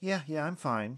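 on the defensive. [name] answers Lucas asking if she is all right, rather defensive. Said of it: "she answered rather defensively".

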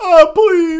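mock frantic desperate wail, very high, very loud. Retelling how a cornered villain starts hard begging for his life: imitating hard begging. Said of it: "the fucking hard begging".

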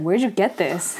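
ordinary delivery

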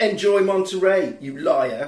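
normal talking voice

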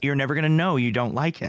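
normal talking voice

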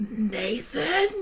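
acted-out mild, restrained, toned-down scream. Retelling finding bugs in the bathroom: imitating her own scream. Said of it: "I'm just screaming".

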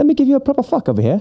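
very high, fast mock posh English accent.

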